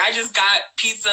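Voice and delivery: ordinary talk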